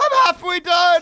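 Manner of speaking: very high, loud screaming yell. Retelling a man heard on a toilet in Thailand: imitating a man screaming. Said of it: "He screamed in English".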